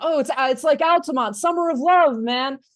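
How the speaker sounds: high, loud shouted outburst. Retelling a punk show where one of them starts shouting: imitating someone shouting. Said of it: "one of them starts shouting".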